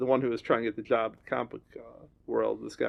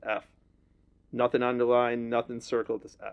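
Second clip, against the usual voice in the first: normal talking voice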